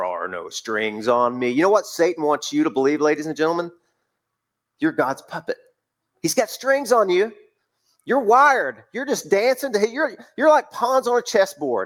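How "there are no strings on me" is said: very deep, slow movie-character voice. Quoting a film line the way Ultron says it: Ultron voice. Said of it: "Ultron says that in his voice that James Spader".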